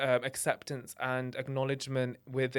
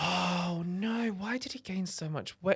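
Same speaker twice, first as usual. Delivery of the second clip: mock whisper, higher; 5 semitones higher than usual. Retelling how an auntie whispered about the speaker's weight: imitating a whisper. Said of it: "whispers and she's like".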